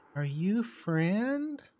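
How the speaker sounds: put-on small, high little child's voice. Game master voicing a voice a player hears in his head, little childlike voice. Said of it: "a little childlike voice going".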